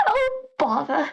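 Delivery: put-on cartoon bear voice. Joking with others on stream: Winnie the Pooh voice. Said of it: "Okay, okay, okay, Winnie".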